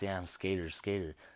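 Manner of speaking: usual speaking voice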